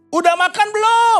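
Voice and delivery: very high, loud, fight-picking combative tone. Showing how a spouse asks about eating, very high, fight-picking tone. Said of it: "Tinggi banget. ... Itu ngajak berantem tuh".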